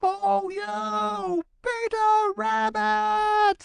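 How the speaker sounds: very high, near-squealing shouted call. Johnny Chuck calls out once more to Peter Rabbit, high-pitched squealing shout. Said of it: "he shouted in such a high-pitched voice that it was almost a squeal".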